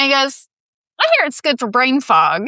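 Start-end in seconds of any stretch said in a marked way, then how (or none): 1.0-2.5 put-on Kentucky good old boy accent, higher, louder. Retell the answer a good old boy from Kentucky gave you, in [name]'s Kentucky accent. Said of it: "good accent".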